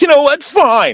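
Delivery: mock very high-pitched, huffy, sulky tantrum outburst. Retelling how a man threw a big tantrum: imitating a tantrum. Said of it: "Then he threw a big tantrum".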